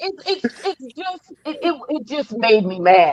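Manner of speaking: stammering over words. Telling someone how Haley sitting there made them mad, stuttering. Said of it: "I'm stuttering".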